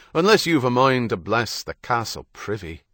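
ordinary delivery

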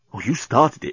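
ordinary talk

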